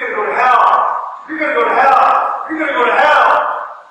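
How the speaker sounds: loud, screamed out yell. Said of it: "was screaming at me".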